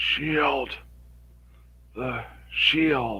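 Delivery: high, rasping, raspy undead voice. Reading a story aloud, voicing the undead, in a raspy undead voice. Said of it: "emitted a raspy voice from its torn mouth".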